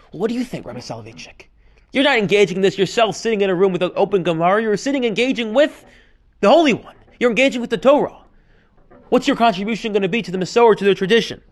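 plain

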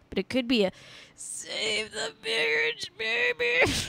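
very high, hushed mutter through clenched teeth. Trying to be polite about something too rude to say loudly, speak through gritted teeth. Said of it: "I'm trying to say it through gritted teeth".

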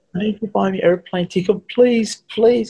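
very high, sobbing, hysterical crying plea. Retelling what one of them said on coming back to the speaker, imitating hysterical crying. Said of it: "came back to me crying hysterical".

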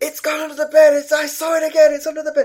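shrill, loud, very high-pitched shout. Retelling what she suddenly shouted late that morning, retelling her shout. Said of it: "she just shouts".

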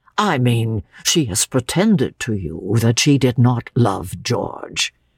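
ordinary delivery

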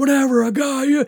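screaming at a very high, shrill pitch. Retelling the brother chasing and slapping the speaker, imitating brother screaming. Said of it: "He's screaming".

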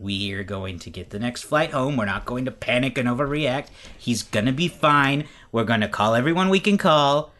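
plain

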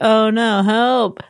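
mock dejected, flat monotone with a pleading tone. Retelling how he asked for help, imitating his flat monotone. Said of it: "asked for help in such a monotone fucking way".

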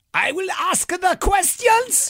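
very high, put-on German accent. Running through a numbered list of accents, the speaker reaches number seven: german accent. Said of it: "German number seven".

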